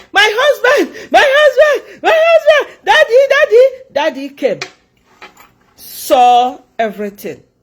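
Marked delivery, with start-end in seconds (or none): 0.1-3.8 acted-out very high, tearful wailing crying shout. Retelling how a woman cried out for her husband: imitating someone crying and shouting. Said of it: "Started crying, shouting".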